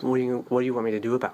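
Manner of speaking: very sarcastic, high and fast. Recounting begging a woman to stop the beatings, the speaker mimics her sarcastic reply. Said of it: "She was very sarcastic".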